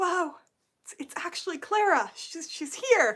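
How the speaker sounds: acted, high, overjoyed, starstruck happy gush. Retelling meeting actors after a show: retelling own past happy excitement. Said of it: "and I was so happy. I was like".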